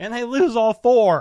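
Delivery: very loud, high voice with cracks. Imagining a team losing four Super Bowls in a row, voice cracking. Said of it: "I made my voice crack".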